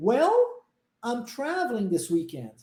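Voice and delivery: rise on 'well', pause, fall toward 'weekend'. Explaining English intonation in Portuguese: rise on well, pause, then fall. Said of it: "eu subo, mas pauso... É uma ladeira, ó, descendo... E depois eu desço".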